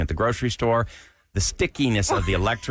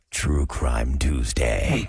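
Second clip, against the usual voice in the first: very deep, low, sinister, menacing put-on voice; 7 semitones lower than usual. Show host introduces a segment title in a menacing put-on voice. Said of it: "I got to do it in the menacing voice".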